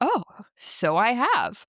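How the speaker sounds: very slow, astonished, surprised, swooping tone. Retelling a man's reply on learning he wandered into a shop: imitating a surprised man. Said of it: "the man looks so surprised".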